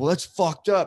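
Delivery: acted-out yelling. Retelling a first-time comic's reaction to him, retelling a yell. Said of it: "And he's like yelling this".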